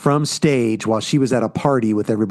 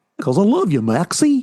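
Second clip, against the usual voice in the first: pitched-up, high, cartoony dad voice; 8 semitones higher than usual. Retelling a movie scene as Goofy telling his son he loves him: Goofy voice. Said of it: "That was actually really good".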